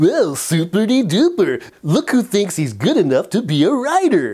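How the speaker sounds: goofy cartoon dinosaur voice. Speaker imagines their inner critic as a children's dinosaur, Barney the dinosaur voice. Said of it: "what if your inner critic became Barney the dinosaur?".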